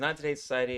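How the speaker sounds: plain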